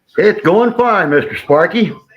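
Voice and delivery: very loud, high-pitched, full-volume yell. Answering a greeting on a live stream: loud voice. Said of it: "you're yelling at me".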